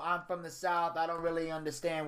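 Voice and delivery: ordinary delivery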